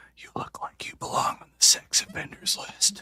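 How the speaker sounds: hushed, breathy stage whisper. Retelling what a friend whispered after shaving his beard: imitating someone whispering. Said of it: "she whispers into my ear".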